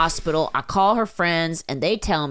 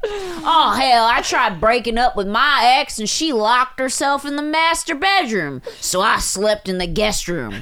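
high, put-on Southern accent, storytelling voice; 6 semitones higher than usual. Voicing a man's story about trying to break up with his ex, southern accent. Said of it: "I gotta talk like he's Southern".

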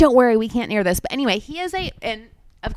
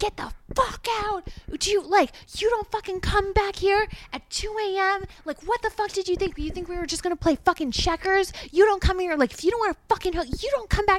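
shrill, very high, enraged, furious screaming; 10 semitones higher, 4 dB quieter than usual. Speaker retells a man screaming in their face, imitating someone screaming. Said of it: "he was screaming at me in my face".

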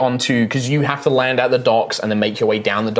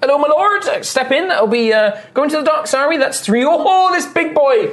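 put-on very high young voice; 3 dB louder than usual. Voicing a young half-elf coach driver greeting the party: young half-elf coach driver voice. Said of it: "the young half-elf is like".

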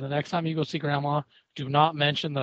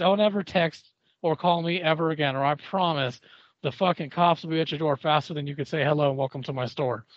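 usual speaking voice

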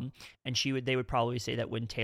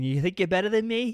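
loud, high Boston accent, laid on up front; 8 semitones higher, 7 dB louder than usual. Talking about favorite accents, a speaker shows off a Bostonian accent. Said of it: "My favorite is the Bostonian".

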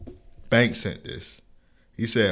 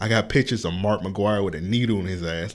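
ordinary talk

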